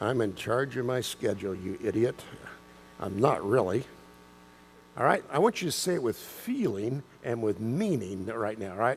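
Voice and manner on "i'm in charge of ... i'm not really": put-on unenthusiastic, much lower, slower. A speaker mimics listeners repeating a phrase back to him, mock-unenthusiastic. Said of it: "You didn't sound very enthusiastic about that. It was more like".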